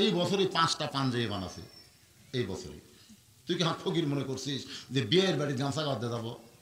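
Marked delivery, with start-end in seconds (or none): none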